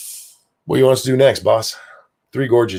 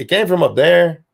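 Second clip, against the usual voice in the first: put-on Mexican accent, pitched up; 8 semitones higher, 4 dB louder than usual. Imitating the people down below answering china: mexican accent. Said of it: "I don't know why I went Mexican with that accent".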